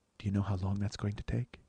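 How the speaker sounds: the most gentle, mild, soft delivery. Retelling a shocked chef's reply to a yelling man: imitating the chef's gentle delivery. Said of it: "it's the most gentle".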